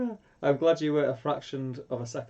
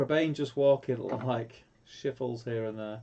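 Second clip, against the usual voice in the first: plain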